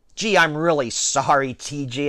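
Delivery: ordinary delivery, nothing marked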